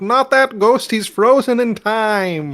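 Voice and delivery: very loud, very high-pitched, drawn-out holler. Yelling a warning to a teammate during the game: yelling it out. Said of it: "I'm yelling it out".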